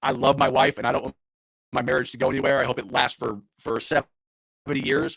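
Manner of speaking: ordinary talk, nothing marked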